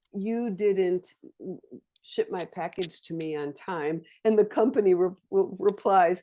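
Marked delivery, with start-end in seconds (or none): none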